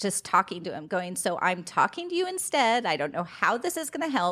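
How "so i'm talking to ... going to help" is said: sarcastic, snarky, reluctant, grudging tone. Retelling a prayer said in the car, imitating her own snarky tone. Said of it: "and I was snarky".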